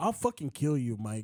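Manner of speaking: put-on cocky, boastful, threatening bully voice. Retelling a fighter's post-fight threat, imitating a cocky threat. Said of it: "it was just nasty".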